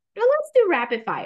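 rapid stressed, high and loud. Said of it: "Emphasis on rapid".

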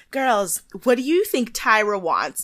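ordinary talk

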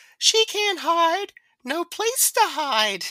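put-on very high-pitched, childlike voice. Recalling the horror film's mother speaking as her son, in Mrs. Voorhees's Jason voice. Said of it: "Voorhees Jason voice. It's like".

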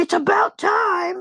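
mock shrill scream. Joking about the apocalypse breaking out: mock shrill scream. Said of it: "this shrill scream of Danny and I going".

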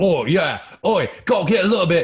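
unsoftened, loud, put-on Cockney accent. Demonstrating accents, contrasting a softer english accent with a cockney accent. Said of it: "than the Cockney accent".

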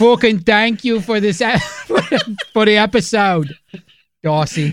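put-on Manchester accent. Podcast hosts thanking the listener who suggested the episode, in a Mancunian accent. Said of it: "We're doing our best Mancunian accents now".

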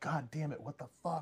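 high, panicky, freaked-out swearing.

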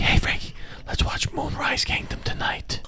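eerie, creepy, breathy whispery tone. Pretending to invite someone to watch a movie tonight, in a creepy whisper. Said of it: "When you say it like that, it's such a creepy, whispery tone".

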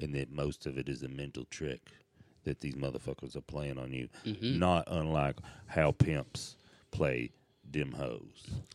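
as deep as possible. Asked to tell how they solved that problem, answering in their deepest voice. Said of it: "tell us how you solved that problem in your deepest voice".

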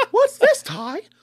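very high, loud cartoon voice. Repeating a line right after praising the other speaker's impression, Agumon voice. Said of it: "I just did a good Agumon".

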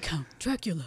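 put-on strained, effortful, pushed British accent. Imitating an actor's line from a movie: Keanu Reeves' British accent. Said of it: "and he's doing a British accent".

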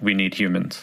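ordinary delivery

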